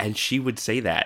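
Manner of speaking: ordinary talk, nothing marked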